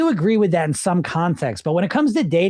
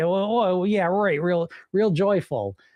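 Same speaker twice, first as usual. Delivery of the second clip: mock sarcastic voice; 3 dB quieter than usual. Imitating listeners who doubt the joy of weight loss: imitating a sarcastic listener. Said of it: "they hear me say that and they think".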